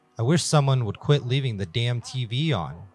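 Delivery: plain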